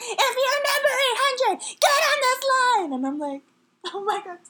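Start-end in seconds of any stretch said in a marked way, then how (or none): 0.0-2.9 mimicked yell, much higher and louder. Retelling being herded like cattle, the speaker imitates a woman yelling. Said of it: "yelling at us like we were cattle".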